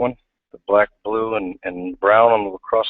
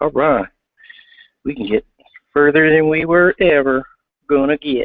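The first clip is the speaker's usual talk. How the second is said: pitched-up, laid-on put-on rural country accent; 5 semitones higher, 3 dB louder than usual. Reacting to extra sidewall holes, the speaker voices his own thought; country accent impression. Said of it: "best of a country impression as I can give you".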